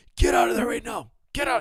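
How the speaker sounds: mock, very high screamed delivery. Retelling a coach yelling orders to a mounted fighter: imitating Mark Coleman screaming. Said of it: "he was screaming".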